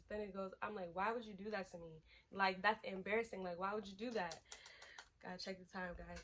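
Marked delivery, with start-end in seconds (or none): 0.9-4.1 put-on angry, confrontational voice. Retelling confronting a partner about cheating: imitating own angry confrontation. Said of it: "So now I'm mad, I'm riffing".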